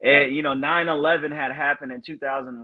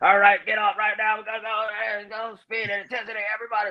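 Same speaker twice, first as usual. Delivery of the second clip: raspy, hoarse, high, barked drill-instructor frog voice; 7 semitones higher than usual. Recalling drill instructors barking orders on arrival, imitating a drill instructor's frog voice. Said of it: "We call it a frog voice".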